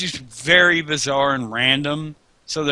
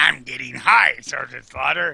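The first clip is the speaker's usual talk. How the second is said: rough, raspy, creaky character voice. Retelling a cartoon scene with a joint, imitating Cobra Commander. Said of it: "And Cobra Commander be like".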